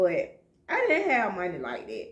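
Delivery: heartfelt, emotional, with pitch swinging. A parent recalling raising their kids, getting a little emotional. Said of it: "And I'm getting a little emotional".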